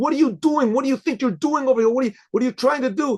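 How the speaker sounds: put-on yelling. Speaker retells a man yelling at him outside a building, imitating someone yelling. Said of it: "He just started yelling".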